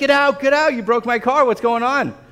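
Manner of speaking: put-on, high-pitched yelling. Recounting their car not moving at sixteen, retelling yelling at friends. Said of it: "I'm yelling at my friends".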